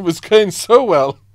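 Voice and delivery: loud, slow speech while laughing.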